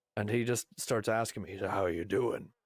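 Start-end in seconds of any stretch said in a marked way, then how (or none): 1.6-2.4 put-on low, rough, gravelly voice. Retelling a man who came up behind him, quoting him in a low, gravelly voice. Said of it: "a low, gravelly voice".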